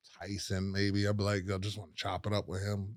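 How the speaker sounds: hushed, reverent voice.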